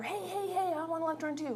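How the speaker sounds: pleading in a high voice. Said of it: "this one's over here".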